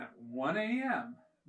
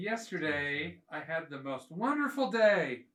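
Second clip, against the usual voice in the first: heavy, dripping sarcasm laid on thick. Starting a story for the group: heavily sarcastic. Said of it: "I can hear the sarcasm".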